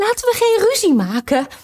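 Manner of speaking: very high-pitched, anxious, worried voice. Narrating a story, a queen tries to stop a quarrel in a worried tone. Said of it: "zei de witte koningin op bezorgde toon".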